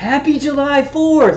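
put-on loud cheerful voice. Retelling turning around to a man who followed them out, retelling a loud smiling greeting. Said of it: "I said it really loud and smiled".

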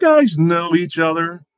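high-pitched, loud comic character voice. Asking whether the guys know each other: Pee Wee Herman voice. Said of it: "Why did you say that like Pee Wee Herman?".

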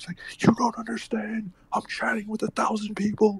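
very high-pitched, hushed whisper. Retelling what he told people banging on the bathroom door, whispering. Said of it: "why is he whispering?".

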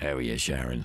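put-on creepy, sleazy, pervy dirty-old-man voice. Repeating how a man greeted Sharon, in a pervy dirtbag voice. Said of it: "He sounded like a dirtbag, actually, that voice".

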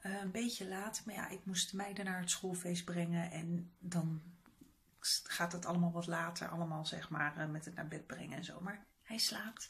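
quiet speech. Speaking softly at night so as not to wake Thomas, who just fell asleep. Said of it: "Ik moet een beetje zachtjes praten".

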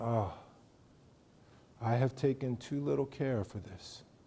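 dropped to a very soft, low hush. Retelling how he speaks the line after pausing: lowered voice. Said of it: "then he lowers his voice".

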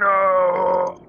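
very loud, drawn-out, shrill scream. Narrating a caged man who collapses to his knees, give a Darth Vader 'No!' scream. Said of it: "with his best Darth Vader impression".

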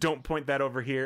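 ordinary talk

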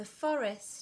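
ordinary delivery, nothing marked

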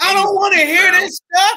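loud, high-pitched shout.

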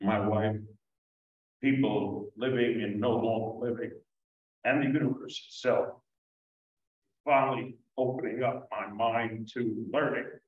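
choked-up voice catching and breaking with emotion. A speaker talking about their wife, choked up. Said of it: "this choked me up".

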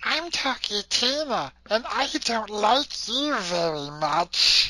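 high creature-like doll voice. Discussing the Twilight Zone episode Living Doll, the speaker does a Talky Tina impression. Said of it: "Why does Talking Tina sound like Gollum?".

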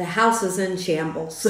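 plain

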